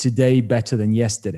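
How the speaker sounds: ordinary delivery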